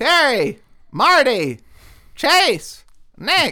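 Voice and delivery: very high, loud, drawn-out, swooping calling voice. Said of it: "I like it when you do her voice".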